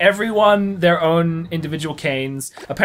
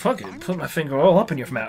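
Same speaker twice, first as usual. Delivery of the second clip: ordinary talk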